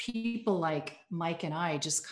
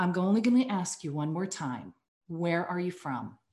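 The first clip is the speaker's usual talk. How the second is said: mock adamant, insistent tone. Retelling the border guard asking again: imitating an adamant demand. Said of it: "made him more adamant".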